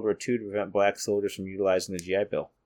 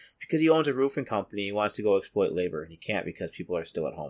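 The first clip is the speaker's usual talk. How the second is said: ordinary talk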